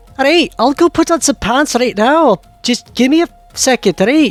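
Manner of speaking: put-on dwarf character accent. Voicing the dwarf Brody answering about pants: voicing Brody with an accent. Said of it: "I keep messing up my accent for Brody".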